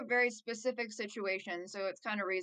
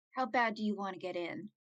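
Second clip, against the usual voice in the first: hushed, whispering voice. Speaking in character to two companions, asking how badly they want in: whispering. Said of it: "I'm, like, whispering it to them".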